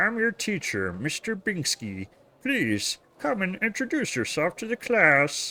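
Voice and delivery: put-on puppet frog voice. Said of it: "sounds more like Kermit the Frog".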